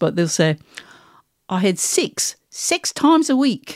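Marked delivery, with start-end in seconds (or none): 1.5-3.8 high, slow New Zealand accent with odd vowels. Explaining weird New Zealand vowels, quoting a famous phrase in a New Zealand accent. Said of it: "New Zealand say this".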